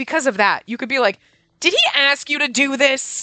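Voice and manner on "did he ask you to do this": slow, pitched-up, resentful, snippy attitude. Showing how a choice line could sound: said with an attitude. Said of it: "With an attitude".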